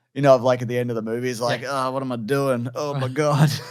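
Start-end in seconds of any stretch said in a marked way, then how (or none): 1.7-3.5 mock-weepy voice, much slower. Discussing an actor's scenes, the speaker mimics Harrison Ford crying. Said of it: "He's doing a lot of like crying".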